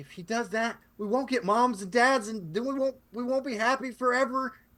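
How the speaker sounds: put-on very high, very loud, slow, upset pleading kid voice. Voicing an upset boy looking at a player: upset boy pleading. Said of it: "he's really upset".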